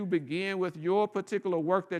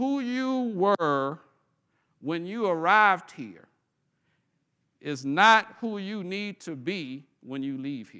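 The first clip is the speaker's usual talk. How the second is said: slow, loud, deliberate delivery; 5 dB louder than usual. Addressing listeners, saying a statement slowly so they get it, slow, deliberate delivery. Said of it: "I want to say it slowly".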